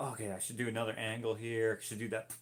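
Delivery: ordinary talk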